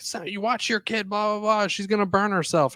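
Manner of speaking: mock alarmed, worked-up, high, freaked-out voice. Retelling how a stranger scolded them about their toddler: imitating someone freaking out. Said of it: "somebody freaked out".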